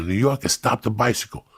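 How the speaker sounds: put-on urgent shout, yelled as across a distance. Retelling yelling at a friend riding downhill: imitating yelling a warning. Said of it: "I'm yelling at her".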